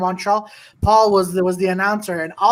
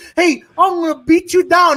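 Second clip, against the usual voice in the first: put-on thick Canadian accent, higher and louder; 9 semitones higher, 5 dB louder than usual. Imitating Brock Lesnar taking the mic before a fight: Brock Lesnar impression, thick Canadian accent. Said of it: "his thick Canadian accent comes and goes".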